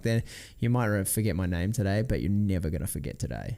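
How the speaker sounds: normal talking voice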